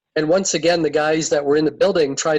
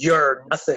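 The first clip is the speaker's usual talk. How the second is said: put-on very evil voice, unlike own; 2 semitones lower than usual. Retelling how a man glared at someone and answered him, in an evil voice. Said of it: "in a very evil voice, a voice that wasn't his own".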